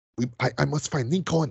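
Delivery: put-on Haitian accent. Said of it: "But here it's just like".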